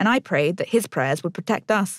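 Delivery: plain reading voice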